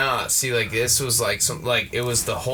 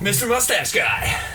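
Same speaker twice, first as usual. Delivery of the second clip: very high, cartoonish animated character voice; 10 semitones higher, 3 dB louder than usual. Introducing oneself on a podcast as Mister Mustache Guy: South Park-like voice. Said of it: "what voice was that?".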